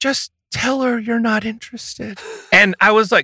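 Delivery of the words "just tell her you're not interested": mock tearful, pitched-up, close to crying. Retelling what she said to him at dinner: imitating someone teary-eyed. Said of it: "she gets teary-eyed, and she says".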